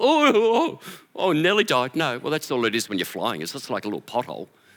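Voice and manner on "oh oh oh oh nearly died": high, stretched-out, drawn-out pretend panic. Acting out a driver hitting a pothole: mock panic over a pothole. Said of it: "have panic attacks when you drive".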